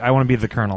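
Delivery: ordinary talk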